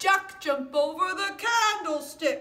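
loud, high lion voice. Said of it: "both my lion voice and my mouse voice".

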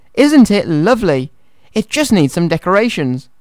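usual speaking voice

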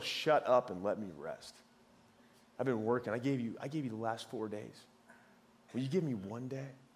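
earnest, dead-serious pleading tone, no joking. Showing the version that is meant, in contrast with a smile: the real, not smiling. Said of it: "It was the real".

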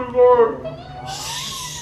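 very high, very slow, drawn-out terrified wail.

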